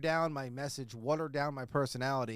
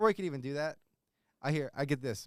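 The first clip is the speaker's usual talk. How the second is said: ordinary delivery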